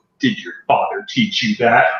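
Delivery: quiet, muttered aside under the breath. Voicing a character taunting just before a swing: muttered under her breath. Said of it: "under her breath".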